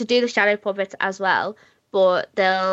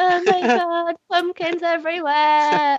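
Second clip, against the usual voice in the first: put-on emotional voice, higher; 10 semitones higher than usual. Retelling own reaction on a video call, imitating own emotional past self. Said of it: "'cause I was emotional".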